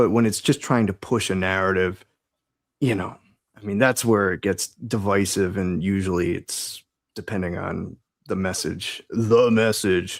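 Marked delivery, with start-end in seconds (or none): 9.1-10.2 put-on, gruff, critic-style voice. Quoting a film reviewer on a film's message: quoting Critical Drinker. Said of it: "to quote Critical Drinker".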